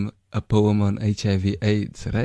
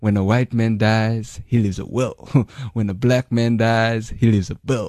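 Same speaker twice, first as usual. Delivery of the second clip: punchy stand-up comedy style delivery. Repeating a joke when asked to do it again: Chris Rock style. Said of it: "Do it again for me in his style".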